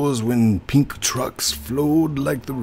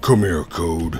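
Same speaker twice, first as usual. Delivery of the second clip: very low, deeply dropped put-on manly voice; 8 semitones lower than usual. Playing a game with others, calling another player over in a more manly voice. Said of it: "I'll give you a more manly voice".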